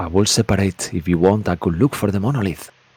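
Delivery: soft stage half-whisper. Speaker voices the character Master Uhog; Master Uhog half-whispering. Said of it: "I'm trying to think that he's whispering".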